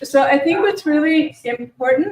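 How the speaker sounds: speaking up. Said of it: "I'll try to speak up".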